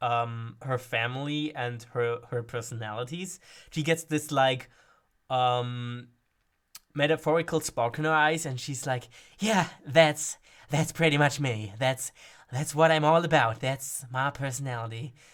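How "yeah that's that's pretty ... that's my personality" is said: put-on, acted childlike excitement. Showing a character talking about her personality: character's childlike excitement, put on. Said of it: "almost childlike, um, excitement".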